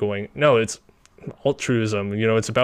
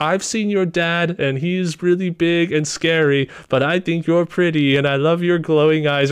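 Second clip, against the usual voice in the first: put-on voice of a small boy; 6 semitones higher, 3 dB louder than usual. Describing a little boy writing a letter to a little girl: Billy's little boy voice. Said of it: "him talking like this".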